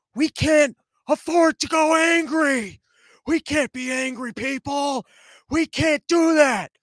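put-on strained, high, whispery old-man yell. Retelling a whispery old guy's yelled speech: imitating a whispery yell. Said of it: "whatever a whispery yelling thing I just did".

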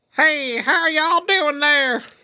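put-on very high-pitched old cowboy type voice. Recalling people they knew, a speaker imitates Stretch's old Western guy voice. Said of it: "voices like an old Western guy".

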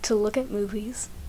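soft, mock-emotional whispered mumble.

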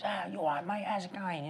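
easygoing, casual tone with lifted pitch. Retelling how Dex came out of the crowd and greeted him: imitating Dex. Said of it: "comes up to me and goes".

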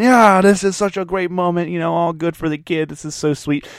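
worked-up, excited, gushing, freaking-out chatter. Retelling how everyone reacted to a kid's big moment: imitating people freaking out. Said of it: "everyone's just freaking out, going".

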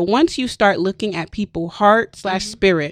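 ordinary talk

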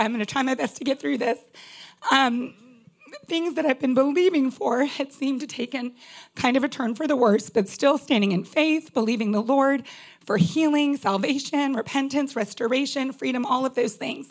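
holding back tears, pushing through. A speaker sharing about praying for loved ones, fighting back tears. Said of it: "I'm trying not to cry".

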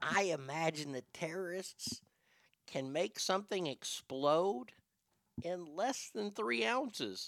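very quiet, hushed, secretive half-whisper. Ranting about flying rules, in case anybody's listening: half-whispering. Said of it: "I gotta whisper this".

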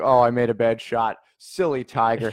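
ordinary talk

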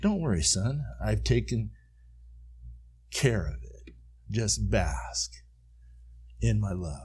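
very hushed, soft, tender, loving whisper. Retelling a voice heard in the ear while worshipping: imitating a kind, loving whisper. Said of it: "loving voice whisper in my ear".

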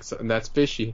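normal talking voice

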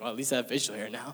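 ordinary delivery

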